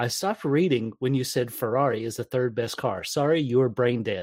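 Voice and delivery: ordinary talk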